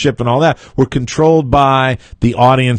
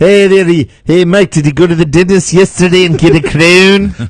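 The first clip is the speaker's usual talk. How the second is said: put-on South African accent, loud and high; 5 semitones higher, 5 dB louder than usual. Talking with a co-host on the show, putting on a South African voice. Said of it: "I love when you do your South African voice".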